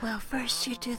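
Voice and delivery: speaking in a whisper. Sharing something too naughty to say out loud, whispering into an ear. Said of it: "let me whisper into your ear".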